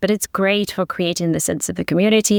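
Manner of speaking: plain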